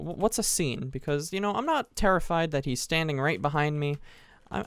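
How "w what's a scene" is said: normal talking voice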